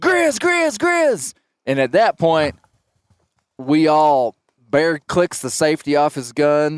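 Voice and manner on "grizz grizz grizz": alarmed, urgent, high, squeezed-out tone. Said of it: "then he goes".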